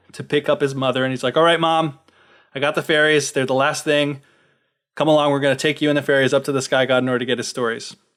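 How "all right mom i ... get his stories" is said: plain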